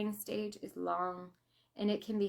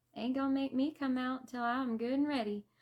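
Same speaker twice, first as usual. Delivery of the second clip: high, put-on newborn baby voice; 5 semitones higher than usual. Telling of the daughter's late birth, the speaker voices the baby's reply in a put-on voice. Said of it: "I don't know why I'm talking like that".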